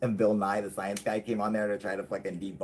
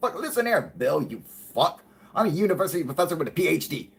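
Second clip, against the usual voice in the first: acted, angry, pitched-up irate man's tirade; 7 semitones higher, 4 dB louder than usual. Retelling a professor getting pissed at another man: imitating an angry man. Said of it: "He was getting pissed because he's like".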